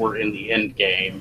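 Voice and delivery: normal talking voice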